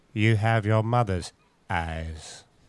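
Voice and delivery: very slow delivery, every word dragged out. Giving a Harry Potter line as Alan Rickman's Snape. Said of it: "I'll give you a Harry Potter line".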